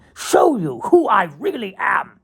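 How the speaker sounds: put-on slow, high, loud old British thespian declaiming.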